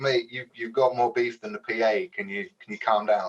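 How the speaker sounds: normal talking voice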